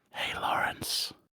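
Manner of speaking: whispered voice. Greeting the others at the start of an episode, whispering. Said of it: "We're not doing the whole episode in whispers".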